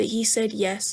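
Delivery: ordinary delivery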